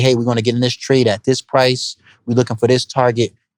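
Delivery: ordinary delivery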